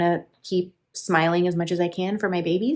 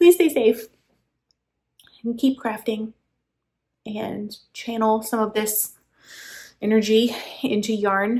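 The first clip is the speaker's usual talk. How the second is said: emotional, halting voice breaking mid-phrase; 4 semitones higher than usual. Signing off a video, telling viewers to stay safe: emotional voice. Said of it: "Sorry, I'm really emotional".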